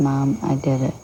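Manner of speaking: ordinary talk, nothing marked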